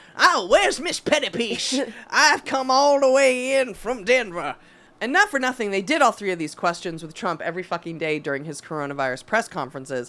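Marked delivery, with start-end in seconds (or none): 0.2-4.6 ghostly Wild West saloon madam voice. Riffing on a woman who sounds like a Wild West ghost, in a Wild West voice. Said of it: "Wild West madam's house who services cowboys".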